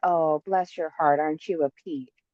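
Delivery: put-on syrupy, sugary-sweet tone. Contrasting southern and northern americans, quoting what somebody says, imitating a sugary-sweet tone. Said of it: "That sounds so sweet".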